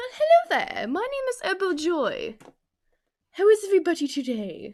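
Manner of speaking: high, swooping, sing-song posh voice. Introducing themself as if they were a girl Stewie Griffin. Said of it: "This is if I was Stewie Griffin, but a girl".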